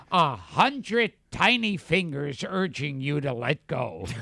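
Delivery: put-on quacky cartoon duck voice. Asked which product he would be spokesperson for, the speaker answers in a duck voice. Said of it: "you did that in your duck voice".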